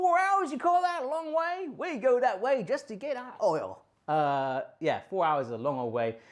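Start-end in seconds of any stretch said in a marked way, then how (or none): 0.0-3.8 very high, overdone, put-on American accent. Saying how an American would react to a four-hour drive: imitating an American. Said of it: "that's my best impression".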